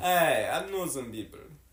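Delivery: put-on Russian accent. Asked for a Russian voice, repeating a line, attempted Russian accent. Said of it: "No Russian voice".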